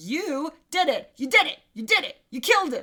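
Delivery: loud, shrill, hammering accusing tone, repeated. Retelling a scene where a character pressures a suspect: imitating someone forcefully accusing. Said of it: "verbally beats it out of her".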